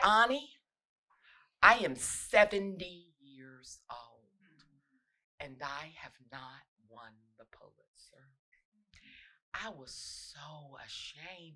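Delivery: bass suddenly entering, deep, bass-heavy voice. Retelling what a woman once said to her, the speaker imitates her voice with bass. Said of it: "she got bass in her voice".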